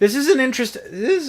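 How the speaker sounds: loud voice crack, breaking very high. Commentating an interesting matchup when the voice suddenly cracks, voice cracking. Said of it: "I don't know why my voice cracked there".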